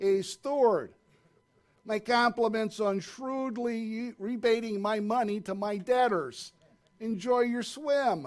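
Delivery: put-on Chicago crime-family mobster accent. The master speaks to the steward just before he is pushed in, in a Chicago crime family accent. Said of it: "in a Chicago crime family accent".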